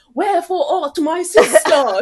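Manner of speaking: very high, slow, drawn-out put-on British accent. Acting out an imagined film set where an actor is asked for a British accent: imitating Jason's put-on British accent. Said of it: "We need a British accent. Like, like, lis-, listen to James, look at, listen to, uh, Jason do it".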